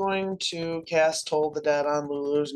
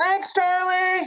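high, slow, grateful call from a distance. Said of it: "from inside".

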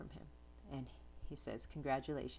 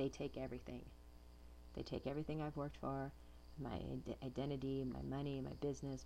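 ordinary talk

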